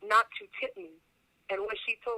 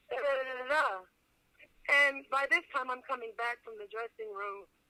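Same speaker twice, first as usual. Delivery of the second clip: ordinary talk, nothing marked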